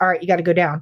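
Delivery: put-on whisper. Retelling the company commander's order to go down, retelling a whispered order. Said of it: "actually like whispers".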